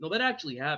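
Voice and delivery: grave, earnest, dead serious insistence. Imitating a fighter insisting a wild story is true, dead serious. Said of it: "his face gets real serious".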